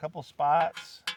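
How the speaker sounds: ordinary delivery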